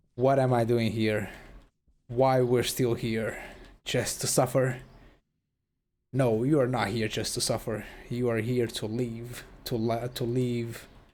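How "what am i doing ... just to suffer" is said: usual speaking voice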